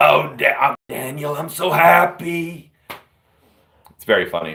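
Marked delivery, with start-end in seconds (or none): 0.0-2.7 very slow, pitched-up, drawn-out effusive gush. Retelling a movie scene, imitating Harvey Fierstein as the brother. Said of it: "his brother, played by Harvey, uh, uh, Feinstein?".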